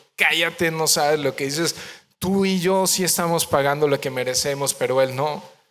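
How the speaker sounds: ordinary talk, nothing marked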